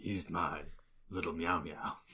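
low, hushed, hardboiled noir detective narration voice. Riffing on a meme about a sleepy character, in noir detective voice. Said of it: "Noir detective voice".

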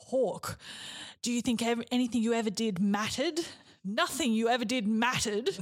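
creepy, sinister demon voice. Recounting a game, the speaker voices the Nightmare speaking to Hawk: booming creepy voice. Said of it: "booming its creepy voice".

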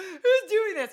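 mock very high, shrill, very loud sobbing wail. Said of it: "Crying 'cause I don't know what's happening".

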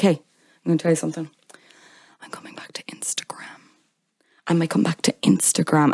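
breathy, teasing, hushed whisper. Retelling how Meghan teased a reporter with a secret: imitating Meghan teasing a secret. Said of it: "She's like this".

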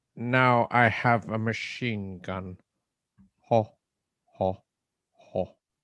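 put-on German villain voice. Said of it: "word perfect and accent perfect, Alan Rickman playing a German villain".

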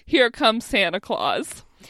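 normal talking voice

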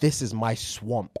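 mock whispering. Reading out a listener's story, retelling what he whispered: imitating someone whispering. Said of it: "He whispered".

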